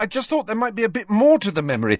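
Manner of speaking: desperate pleading tone, very high pitched. A narrator reads Harry's line to Slughorn as he marches out, desperate. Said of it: "said Harry desperately".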